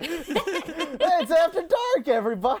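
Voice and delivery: very high, loud, drawn-out puppyish exuberance. Showing the wrong way to come in, with golden retriever energy. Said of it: "energy of a golden retriever".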